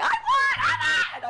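very high, very slow, drawn-out screaming. Retelling making a fuss going down the stairs, acting out screaming. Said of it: "And I'm like screaming".

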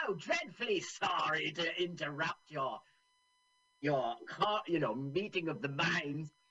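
theatrical, grand, polite, apologetic gentleman voice. Describing a film scene, voicing the general who arrives: Terry Thomas impersonation. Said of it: "are you doing your Terry Thomas impersonation?".

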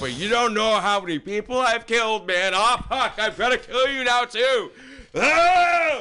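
high, shouted outburst with oh stretched long. Right after joking about the people he's killed, speaker turns on the listener, yelling. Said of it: "Sorry for yelling".

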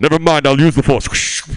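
put-on very loud, belted-out, stoned villain voice. Doing a stand-up impression of a character smoking weed: Darth Vader smoking weed.

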